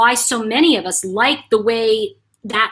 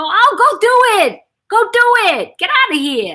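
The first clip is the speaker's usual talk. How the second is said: put-on Polish accent, very high, slow and drawn out; 11 semitones higher, 4 dB louder than usual. Recalling how the speaker's grandmother used to talk; imitating grandmother's Polish accent. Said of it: "she had a Polish accent, so she'd go".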